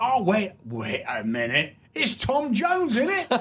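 put-on London Cockney accent, high and swooping. Retelling a Cockney man asking for a signature on a beer mat, imitating a Cockney accent. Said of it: "this Cockney comes in".

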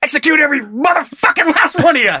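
put-on screamed threat. Quoting the robbery scene from Pulp Fiction: imitating a Pulp Fiction robber screaming. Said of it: "Or whatever she screamed".

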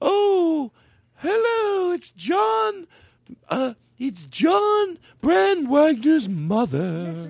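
very slow, very high, elegant, genteel sing-song drawl. Imitating how a guest's mother introduces herself: elegant imitation of a guest's mother. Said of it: "Let's all make her sound elegant".

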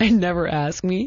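plain

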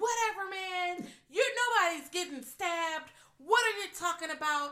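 dismissive, drawn-out, high, mocking voice.

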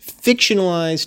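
fictionalized pitched high and stressed. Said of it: "fictionalized domestic violence".

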